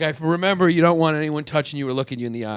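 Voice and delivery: normal talking voice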